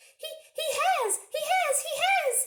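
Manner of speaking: very high, loud little squirrel squeak. A narrator reading a young squirrel's outburst at the table: squeaky voice. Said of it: "It squeaked".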